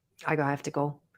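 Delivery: put-on disinterested tone. Retelling how the oncologist brushed off a former patient: imitating Doctor Rubinger's disinterested brush-off. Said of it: "totally disinterested".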